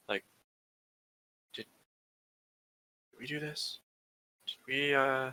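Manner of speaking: half-whispered, as hushed as possible. Half-whispering to the nearest group member so another player won't hear: half-whispering. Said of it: "I'm gonna try to whisper".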